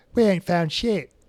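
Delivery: terrible put-on Australian accent. Retelling how Rachel combed for cheaters, the speaker is imitating Rachel's bad Australian accent. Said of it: "in her um, Australian accent".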